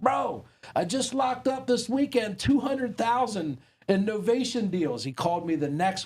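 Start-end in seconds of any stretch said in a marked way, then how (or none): 0.0-5.0 put-on higher Boston accent. Retelling a voice message from Tommy: imitating Tommy's Boston accent. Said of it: "with his Boston accent and was like".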